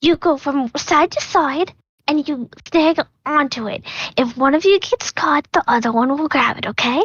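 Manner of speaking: hushed voice. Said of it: "whisper in Griffey".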